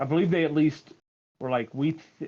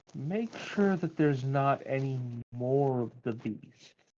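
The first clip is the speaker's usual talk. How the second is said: voice dropped a little, kept quiet. Playing a character who looks around, speaking to the group: lowered, quiet voice. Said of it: "lower my voice a little".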